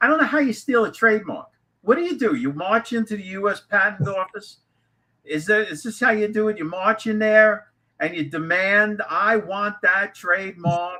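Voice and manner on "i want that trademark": Boston accent, demanding tone. Joking about how a trademark gets stolen, playing the one demanding it, in a Bostonian accent. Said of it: "you have your best Bostonian accent".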